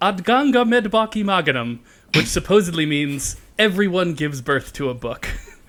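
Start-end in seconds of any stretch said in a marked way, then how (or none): 0.0-1.8 accent from Iceland. Quoting a saying from Iceland, in their best Icelandic accent. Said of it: "I'm going to do it in my best Icelandic accent".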